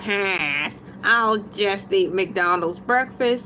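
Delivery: put-on cartoon voice with pass drawn out. Reading out breakfast poll results in Squidward voice. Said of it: "in my Squidward tentacle voice".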